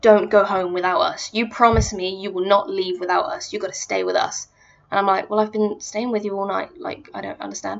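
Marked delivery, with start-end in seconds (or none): 0.0-4.5 mock-aggressive, pushy, condescending, patronizing tone. Retelling a night out, imitating a guy at a club: mock-aggressive, condescending. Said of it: "quite aggressively, but very, like, condescendingly comes up to me and is like".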